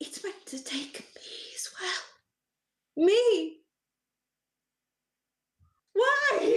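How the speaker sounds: very high, very drawn-out, overwrought emotional cry. Retelling a scene where a woman in the fog turns toward you, acting out sudden emotion. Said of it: "getting very emotional very quickly".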